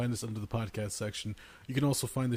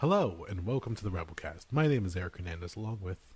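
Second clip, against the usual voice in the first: low, calming, soothing voice; 4 semitones lower than usual. Podcast host opening the show, in a soothing voice. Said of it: "I'm gonna use my soothing voice".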